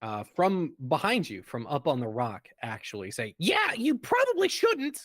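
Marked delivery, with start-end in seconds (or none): 3.4-5.0 very high, shrill, squawky voice. A voice from up on the rock answers the players, high-pitched squawky voice. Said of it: "you hear a kind of high pitched, squawky voice".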